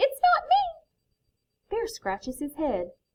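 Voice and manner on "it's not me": very high, tiny, squeaky little voice. Reading a story aloud, Mouse answers the Bear: squeaky Mouse voice. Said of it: "Mouse scurries up and squeaks".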